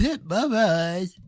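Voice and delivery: blocked-nose, congested delivery. Mocking how the speaker in a video says a show name: imitating a congested voice. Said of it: "It sounds like he has, like, congestion".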